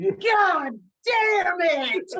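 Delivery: put-on very high, full-force top-of-lungs shriek. Retelling a strap match, the speaker imitates Kurt Hennig screaming at the top of his lungs. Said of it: "At the top of his lungs".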